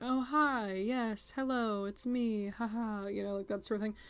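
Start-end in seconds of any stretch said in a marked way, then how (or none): 0.0-3.1 mock very slow, serene, unhurried, very calm voice. Describing a woman she knows, the speaker imitates her very calm voice. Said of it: "talks in a very calm voice".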